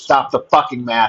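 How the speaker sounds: plain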